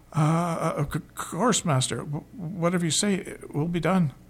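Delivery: slow, nervous, apprehensive stammering. Narrator reads Scale answering his master Elfin, stuttering nervously. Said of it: "caused him to stutter".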